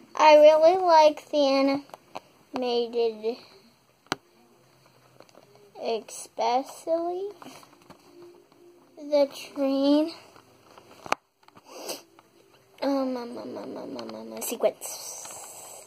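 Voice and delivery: very slow, drawn-out, stalling delivery. Sharing thoughts on the film's animation, talking very slowly. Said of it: "Why are you talking so slowly?".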